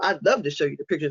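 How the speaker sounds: normal talking voice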